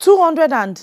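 shouting. Told to bring 275,000 naira for Mama's birthday: shouting. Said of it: "Why are you shouting?".

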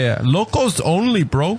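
fake Hawaiian local accent, slow and high. Asked if it's a Hawaiian accent, repeating the line in a Hawaiian accent. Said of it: "It sounds almost like you're saying loco only".

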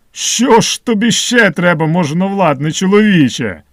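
thunderous, booming voice. An old man climbing out from under roots questions a man, thunderous voice. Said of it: "запитав громовим голосом".

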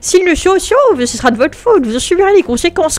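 little, small, high put-on character voice. Acting out a scene, going back to the small voice, in a small put-on voice. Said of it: "je reprends ma petite voix".

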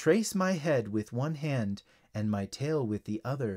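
usual speaking voice

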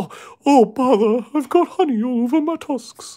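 very high, loud, slow delivery. Describing the Pooh Bear Elephant with honey on its tusks: Pooh Bear voice. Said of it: "It's this terrible Pooh Bear impression".

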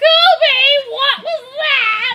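very high, slow grandma voice, words stretched out. Imitating Kobe's grandma coming down to check on a noise: imitating a grandma calling down. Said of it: "Your grandma's gonna come down there and be like".

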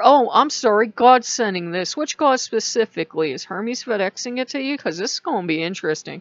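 usual speaking voice

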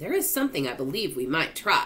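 ordinary delivery, nothing marked

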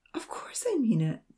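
insistent, argumentative, arguing tone. The blonde replies to the tearful patient who doubts her, arguing. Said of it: "the blonde argued".

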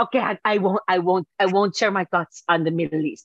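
bad put-on Spanish accent. Quoting her reply, imitating her with a horrible Spanish accent. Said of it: "I think I'm making her sound more like that".

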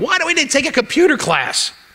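play-acted, very high shrieking scream. The speaker recalls his 1984 computer class, retelling a scream. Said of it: "I'm screaming at them going".

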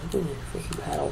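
fast, soft frustrated whisper.

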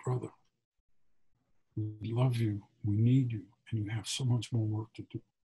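whispering. Retelling what a man holding him whispered in his ear, whispered. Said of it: "he whispers in my ear".

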